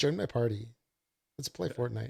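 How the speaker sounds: usual speaking voice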